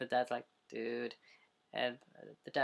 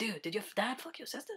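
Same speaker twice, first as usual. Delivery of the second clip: mock, very high, way too excited voice; 9 semitones higher than usual. Retelling a funny line from a scene: imitating an overexcited line. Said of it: "Sounded too excited".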